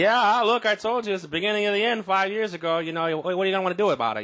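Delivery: put-on Boston accent, pitched very high. Imagining a Boston Globe writer years later, the speaker does a Boston accent. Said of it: "Was that was that a good Boston accent?".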